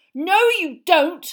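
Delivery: roar, shrill, very loud and high. Harry as the cat Crookshanks darts towards his wand, roaring. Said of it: "roared Harry".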